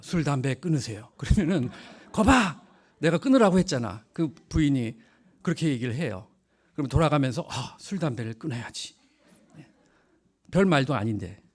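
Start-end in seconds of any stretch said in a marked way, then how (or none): 0.0-1.1 deep, low, dropped voice. Explaining that you just need to say it low: low voice. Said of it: "그냥 이렇게 저음으로 말하면 돼요".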